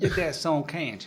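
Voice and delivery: put-on southern US accent. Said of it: "You say that in a southern drawl".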